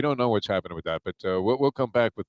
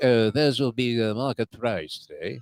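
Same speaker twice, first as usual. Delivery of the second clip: put-on slow, phony French accent. Talking about chicken wing prices, speaker does Mike Mayo's phony French accent. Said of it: "comes out with like a phony French accent".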